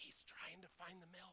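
very quiet, hushed, breathy whisper. Retelling whispering to someone at the bed after a birth: retelling a whisper. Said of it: "and I whispered to Laura".

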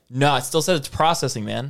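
normal talking voice

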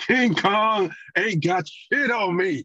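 very slow, very high, drawn-out bragging delivery. Answering a friend about Training Day Denzel: Denzel Washington impression. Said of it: "my best impression of him".

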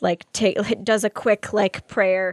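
ordinary delivery, nothing marked

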